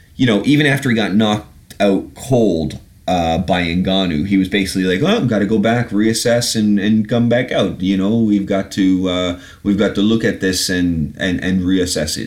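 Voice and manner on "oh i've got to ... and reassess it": terrible, clumsy put-on Dutch accent. Retelling how Overeem reacted after being knocked out, in a terrible Dutch accent. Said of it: "terrible Dutch accent".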